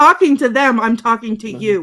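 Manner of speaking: loud, high, stern, firm teacher voice. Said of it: "there's the teacher voice right there".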